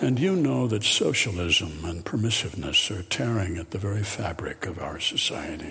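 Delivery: very low voice.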